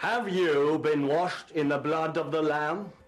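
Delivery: resounding revival pulpit preaching voice. Teaching someone the essentials of effective mission, showing a good preaching voice. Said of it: "you need a good preaching voice. Like this".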